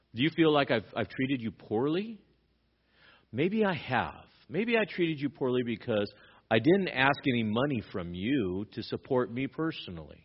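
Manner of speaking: mock heavy sarcasm, needling, swooping sing-song. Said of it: "with a lot of sarcasm".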